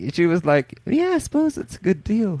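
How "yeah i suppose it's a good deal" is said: very high-pitched put-on British lady accent. Retelling what the lady answered: imitating her in a put-on British accent. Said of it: "I don't think she had a British accent".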